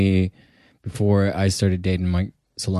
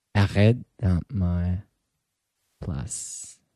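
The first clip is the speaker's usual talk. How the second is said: creepy, eerie, much quieter voice; 6 dB quieter than usual. Urged on a podcast to say something in French with the lights off, creepy. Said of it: "That sounded so creepy right now".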